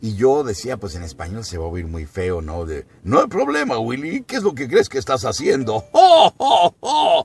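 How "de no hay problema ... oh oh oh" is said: put-on dopey voice, much higher, louder. Explaining how the character's voice sounded in Spanish, a dopey ALF voice. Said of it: "como bobo".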